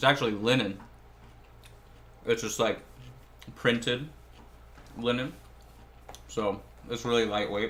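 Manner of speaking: talking while chewing. Describing their outfit on camera, talking while chewing. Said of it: "sorry for chewing with my mouth full".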